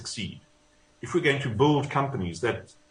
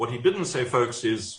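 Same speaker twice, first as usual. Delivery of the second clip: plain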